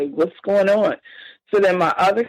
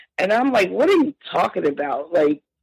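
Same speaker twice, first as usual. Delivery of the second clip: normal talking voice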